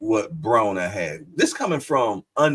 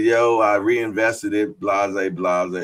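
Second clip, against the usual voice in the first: usual speaking voice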